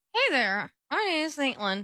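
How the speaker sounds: high ventriloquist dummy voice. Asked by another person to show their ventriloquism, ventriloquist voice. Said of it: "Let's hear your ventriloquism".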